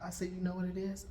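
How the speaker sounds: normal talking voice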